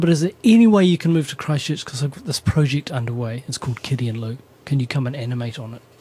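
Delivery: ordinary talk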